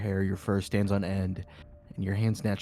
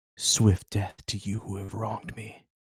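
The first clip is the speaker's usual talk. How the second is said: hushed stage whisper. Narrating a dark scene to the players, voicing an unseen speaker: half-whispering voice. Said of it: "you hear that voice in Elvish whisper".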